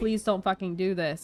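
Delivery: acted-out pleading voice. Retelling a movie scene, the speaker voices the mom: imitating a pleading mom. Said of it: "And the mom is pleading".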